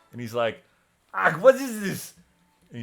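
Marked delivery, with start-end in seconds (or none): 1.1-2.1 very high, very loud startled yelp. A game master voicing a character the player has just startled: really startled. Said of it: "he's sort of like really startled".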